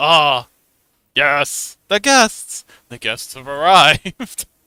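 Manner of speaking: reanimated monster tavern keeper voice. A game master voices the tavern keeper greeting arriving guests: Frankenstein tavern keeper voice. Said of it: "the Frankenstein tavern keeper pipes up and says".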